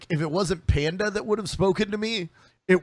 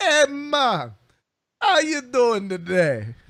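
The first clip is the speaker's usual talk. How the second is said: slow, high, very drawn-out put-on Jamaican accent; 7 semitones higher, 4 dB louder than usual. The speaker imagines greeting their class trainer in Azeroth, in a Jamaican-sounding accent. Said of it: "I just want to hear people talking in that voice".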